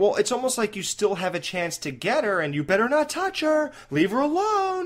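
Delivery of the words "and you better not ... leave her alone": mock, pitched-up, rising threatening tone. Demonstrating how a character delivers the line, warning tone toward Jason. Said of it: "like you're like warning Jason".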